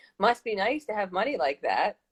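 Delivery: playful, joking, teasing tone. Retelling a woman's reaction to the hotel plan, imitating a joking remark. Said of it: "And jokingly".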